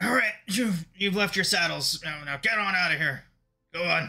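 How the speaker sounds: put-on crotchety, grumpy old man voice. Voicing the crotchety old man sending the players away: crotchety old man voice. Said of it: "So he's like".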